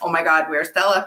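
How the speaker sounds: ordinary delivery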